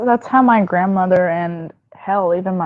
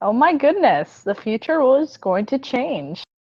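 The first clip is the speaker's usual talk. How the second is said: sarcastic, sing-song fake excitement and amazement; 5 semitones higher, 3 dB quieter than usual. Joking about a wireless headphone release: sarcastic fake excitement. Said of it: "that was just totally sarcastic".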